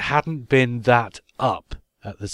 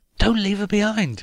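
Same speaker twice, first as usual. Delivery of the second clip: very high, screamed pleading; 9 semitones higher than usual. Retelling watching a TV episode, the speaker re-enacts screaming at the telly. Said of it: "And I'm screaming at the telly".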